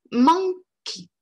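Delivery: monkey with mon stressed, second syllable shrunk. English pronunciation lesson with a reduced second syllable: stress on first syllable of monkey. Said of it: "vous allez accentuer la première syllabe et puis surtout rendre toute petite la deuxième".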